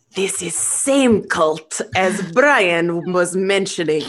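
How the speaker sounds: theatrical stage whisper. A character speaks aside to anyone nearby: stage whisper. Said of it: "In a stage whisper to anyone".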